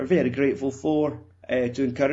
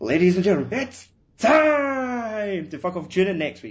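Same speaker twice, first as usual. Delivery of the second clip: ring announcer voice, pitched up, words drawn out; 6 semitones higher, 4 dB louder than usual. Asked for his best American accent, a man does it, UFC announcer voice. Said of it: "do it like a fucking UFC announcer".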